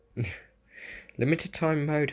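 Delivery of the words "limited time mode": high, excited, thrilled tone. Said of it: "Sorry, I'm getting excited now".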